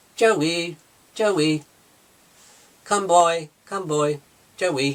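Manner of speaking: robotic voice calling out, high and slow. Retelling a film scene, calling out to a dog: Megan's robotic voice. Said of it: "It sounds so robotic".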